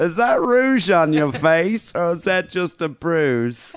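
put-on elderly English woman's voice. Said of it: "do like old English lady voice".

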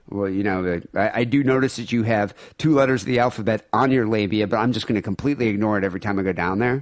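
ordinary talk

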